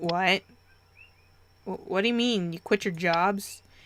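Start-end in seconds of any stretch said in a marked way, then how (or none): none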